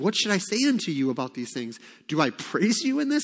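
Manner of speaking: heavy sarcasm with swooping pitch. Reading out a rebuke to a church, retelling a sarcastic question. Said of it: "you hear that sarcasm".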